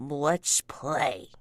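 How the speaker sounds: very mumbly creature voice, words run together. Voicing a creature about to throw a rock: very mumbly voice. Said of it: "in a very mumbly voice".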